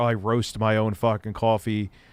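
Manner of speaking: ordinary talk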